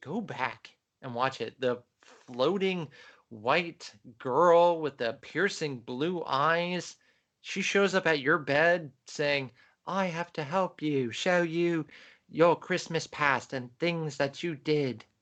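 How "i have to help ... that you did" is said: bad, fake, put-on British accent. Describing a floating ghost girl who shows up at your bed; horrible british accent. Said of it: "That was my horrible British accent".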